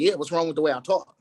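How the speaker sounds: ordinary talk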